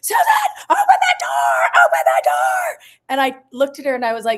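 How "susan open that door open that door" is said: put-on, loud, full-volume screaming. Retelling a sister hitting the wall at night: imitating a sister screaming.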